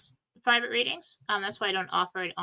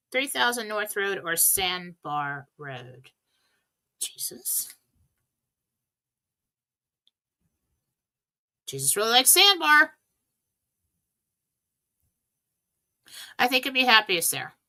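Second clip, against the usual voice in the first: worn-out, overused speaking voice. Reading out and answering questions after talking all day, voice worn from talking. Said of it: "Excuse the voice, I've been talking all day".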